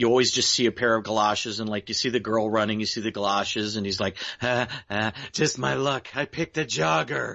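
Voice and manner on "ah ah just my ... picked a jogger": silly, goofy character voice. Describing a show's character the Breather, doing his silly voice. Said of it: "the character of the Breather has this silly voice".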